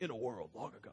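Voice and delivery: very low, very soft, hushed movie-trailer narration voice. Speaker telling kids to picture a movie while reading, movie trailer voice. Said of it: "that movie voice".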